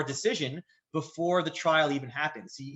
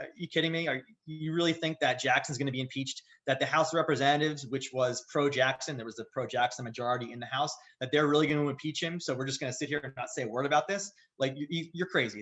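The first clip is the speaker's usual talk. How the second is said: normal talking voice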